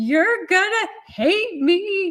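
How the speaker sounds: put-on very high, drawn-out bawling through tears. Retelling a phone call to a best friend, imitating own past crying. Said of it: "I'm just bawling my face off".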